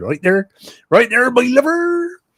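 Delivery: put-on old local accent, very high, pirate-like. Speaker shows how people in his part of the world used to speak: put-on local accent.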